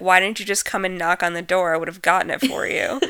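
relaxed, offhand put-on voice. Retelling a movie scene, imitating James Earl Jones at the door: throwaway voice. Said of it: "in such a, like, throwaway voice".

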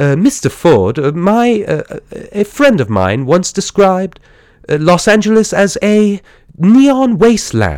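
put-on high, timid, hesitant, halting, nervous British accent voice.

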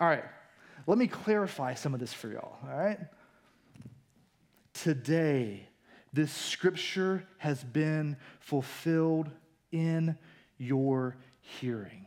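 very slow, measured, deliberate, unhurried delivery. Retelling a scripture scene, imagining the speaker saying it very slowly. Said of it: "I imagine he said this very slowly".

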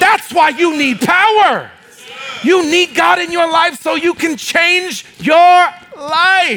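high, slow preaching shout, "life" drawn out. Preaching a point and getting carried away: shouting while preaching. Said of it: "I'm shouting today".

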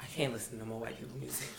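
very quiet, low, fast muttering under the breath. Retelling a guest's remark, in a quiet mutter. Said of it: "really quietly mutters".

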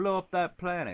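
put-on polite British accent. Recalling a film villain's calm order, the speaker imitating Tarkin's polite British accent. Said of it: "he politely, in his British accent, was like".

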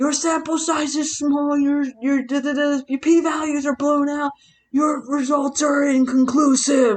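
mock shouting tirade. Retelling a meme where a character is yelling: imitating someone yelling.

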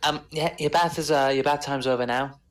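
small, little, high-pitched voice. Voicing someone at the door after a knock: little voice. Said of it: "a little voice says".

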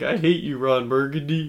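sobbing, weeping through the words. Retelling a scene from Anchorman to a friend, imitating Chris Parnell crying. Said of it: "And he's like crying".

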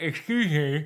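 mock speech as if mouth is full. Retelling what she said at the dentist: imitating talking with tools in mouth. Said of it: "with tools in my mouth".

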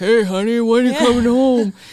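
very loud, hollering call. Picturing him calling his wife: imitating Rex Heuermann. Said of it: "you just picture Rex Heuermann like".

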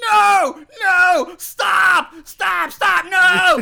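put-on top-of-lungs scream. Retelling a psychic's sudden outburst at the table: imitating someone screaming. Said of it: "starts screaming at the top of his lungs".

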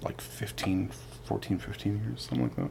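very quiet. Answering how long the speaker's parents were married, said very quietly. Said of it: "You said that really quiet".

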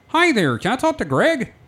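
very high, squeaky frog puppet voice. Retelling his own phone call to a store: Kermit the Frog voice. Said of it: "it's gonna sound like Kermit the Frog".

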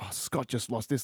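mimicked whisper. Speaker recounting his mum's reaction to his loss; imitating mum whispering. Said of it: "she's like whispering to people".

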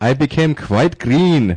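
put-on best-effort Czech accent. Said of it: "let me try my best Czech accent".

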